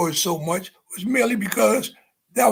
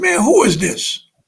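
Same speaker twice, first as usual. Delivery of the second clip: mock irritated, slow, angry tone; 4 semitones higher, 4 dB louder than usual. Retelling answering a ringing phone, imitating own angry voice. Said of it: "I was real angry".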